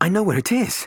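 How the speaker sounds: very high, loud gasped delivery. [name] speaks to Robin as she opens her door: gasped. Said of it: "he gasped".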